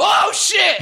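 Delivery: very high-pitched, shocked shout.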